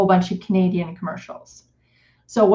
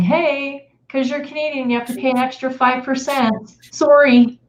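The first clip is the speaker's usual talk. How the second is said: higher, mock polite, chirpy corporate tone. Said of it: "the nice little email saying".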